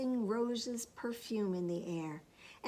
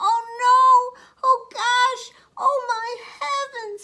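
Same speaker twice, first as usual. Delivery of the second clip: very high, loud, drawn-out tiny squeaky cry; 13 semitones higher, 15 dB louder than usual. Reading a story aloud, voicing Baby Bear: wee little voice. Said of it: "he cried in his wee little voice".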